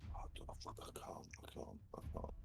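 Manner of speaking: exhausted, worn-out, breathy near-whisper, sounding defeated. A player in a tabletop game, deciding a spell level, sounds exhausted. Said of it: "You sounded so exhausted".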